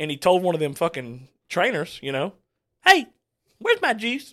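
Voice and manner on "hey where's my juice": put-on shrill, very high, loud West Virginia accent. Act out Jimbo from West Virginia asking a trainer for juice, in a fast, high-pitched Jimbo voice. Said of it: "Jimbo talks like this, you know, real fast".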